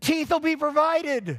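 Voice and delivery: very high, shrill yell. Telling a story about a man's late comeback to a woman, retelling his yell. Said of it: "And finally he just turned and yelled".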